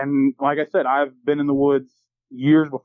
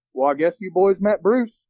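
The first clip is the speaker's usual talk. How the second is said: mock casual, unbothered, offhand, pitched up; 5 semitones higher than usual. Retelling the property manager's reply to scared students: imitating a nonchalant remark. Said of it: "just kinda chuckled and just nonchalantly goes".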